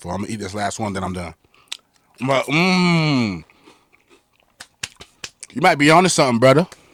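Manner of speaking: talking through a mouthful while munching. A co-host eats chips during a basketball trade discussion, talking while eating chips. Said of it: "Sorry y'all for eating chips".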